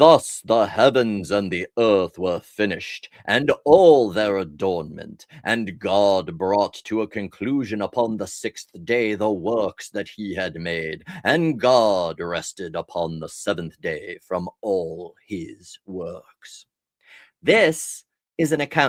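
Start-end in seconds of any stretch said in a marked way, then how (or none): 0.0-16.7 deep, slow put-on divine voice. Quoting a scripture passage aloud, God voice. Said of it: "Do you like my God voice?".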